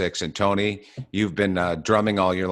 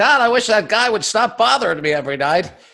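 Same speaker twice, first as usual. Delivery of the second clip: shrill, very high, loud griping, off-mic; 8 dB louder than usual. Imitating the DJ grumbling once the mic is off: impression of Tony. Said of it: "that's a great impression".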